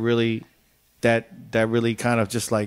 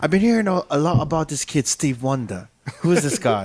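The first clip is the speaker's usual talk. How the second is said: put-on breezy, relaxed, curious British accent; 4 semitones higher than usual. Retelling what the music director said after his trip, imitating Eddie McDonald's British accent. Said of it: "He has this British accent".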